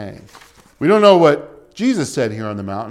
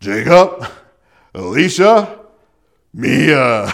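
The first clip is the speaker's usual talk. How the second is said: loud, firm, stern dad voice, name drawn out; 5 dB louder than usual. Calling kids in the street as a bus comes: raised, put-on stern fatherly voice. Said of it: "I have to raise my voice and put on my fatherly voice".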